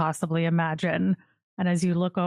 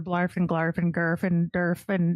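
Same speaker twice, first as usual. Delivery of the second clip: normal talking voice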